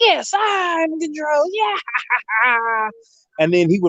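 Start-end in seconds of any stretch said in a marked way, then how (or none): 0.0-2.9 very high, slow, stretched-out cartoon-villain voice. Retelling a cartoon scene where the character takes control: imitating Starscream. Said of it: "He'd be like".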